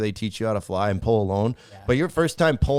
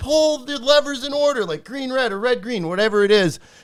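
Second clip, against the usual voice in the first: mock shrill screaming, very high-pitched; 13 semitones higher, 4 dB louder than usual. Retelling how the guy on the ground shouted instructions: imitating someone screaming orders. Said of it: "just screaming at him".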